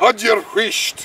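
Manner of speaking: firm, insistent, forceful, emphatic tone. Demonstrating the scottish term for be quiet, with forceful intonation. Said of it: "when you say it like that, with that sort of forceful intonation".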